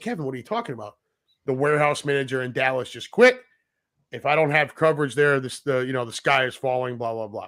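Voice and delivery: ordinary talk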